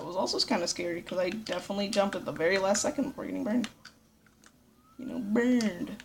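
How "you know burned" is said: goofy, dopey, dumb put-on silly voice. Commenting on a game after a close jump, in a dumb voice. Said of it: "Why did I say it in that voice?".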